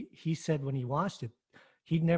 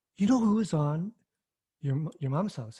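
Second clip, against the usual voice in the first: mimicked excited voice, louder; 4 dB louder than usual. Retelling how a son came up asking a question: imitating someone excited. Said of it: "he was, like, all excited".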